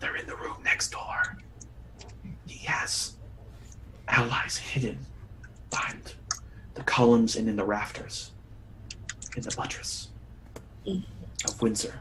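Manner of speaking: strained, pained, hushed whisper stifling winces. Game narrator voices a man as the bindings are released from his wrists, whispering. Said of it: "he he whispers".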